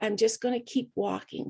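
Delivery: plain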